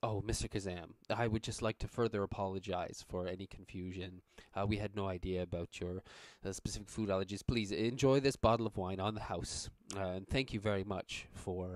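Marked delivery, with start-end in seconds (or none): none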